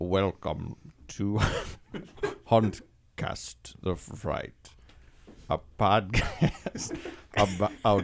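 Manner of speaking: leisurely, deliberate, every word drawn out slowly. Reading a podcast intro he wrote: Alfred Hitchcock impression. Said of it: "Let me try to do it like Alfred Hitchcock".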